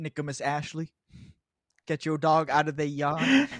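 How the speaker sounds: put-on Louisiana Cajun accent. Joking with the others, doing a put-on Cajun accent. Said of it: "wasn't that bad of a Cajun accent".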